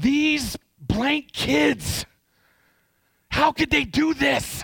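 loudest possible high-pitched yell. A father retells what he yelled about his kids: retelling a loud yell. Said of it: "in the loudest voice that i could muster up".

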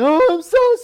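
frantic, panicky voice. Retelling apologizing after a truck hit the car, retelling freaking out. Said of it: "and I'm freaking out".

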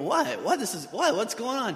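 mock groggy, high voice with swooping intonation. Acting out being woken by excited kids: imitating groggy dad. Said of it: "kinda groggy".

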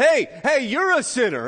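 mock preacher voice, high, swooping, accusing shout. Imitating John in a river, shouting at a passing driver: imitating John shouting. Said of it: "this man is in the river and he's shouting".

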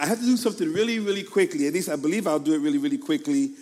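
fast, rushed, rattled off.

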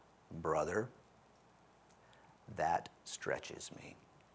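soft, deep, low baritone delivery. Retelling how Sonny answered a student's crazy tale, in Sonny's baritone voice. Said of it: "in his baritone voice said".

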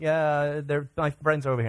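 ordinary talk, nothing marked

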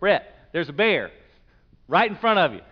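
pressing, urgent delivery.

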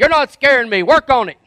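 loud, high-pitched sergeant-style retort. Retelling a Full Metal Jacket scene about showing a war face: imitating Gunny. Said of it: "And he'd say".

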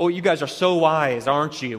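snide, mocking, snarky sarcasm. Acting out how he spoke to them: mock-sarcastic. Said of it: "With a very sort of sarcastic, snarky tone".

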